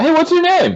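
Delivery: very high-pitched yell, calling across a distance. Yelling to an orc who is walking away: calling out loudly. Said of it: "I would like to yell to him".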